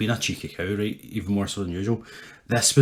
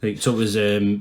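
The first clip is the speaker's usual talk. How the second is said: ordinary delivery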